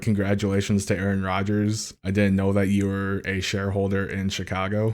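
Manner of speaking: ordinary talk, nothing marked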